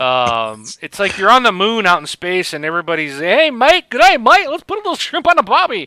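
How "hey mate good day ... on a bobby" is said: very high, shrill, loud, bad fake Australian accent. Imitating characters in a game, in a horrible fake Australian accent. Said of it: "I know that was a horrible Australian accent".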